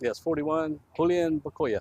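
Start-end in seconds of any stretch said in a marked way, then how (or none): 1.0-1.8 put-on Spanish accent, higher. Identifying the downed player, the speaker says his name in a best Spanish accent. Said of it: "in my best Spanish accent possible".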